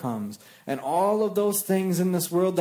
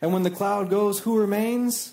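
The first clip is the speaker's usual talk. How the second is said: ordinary talk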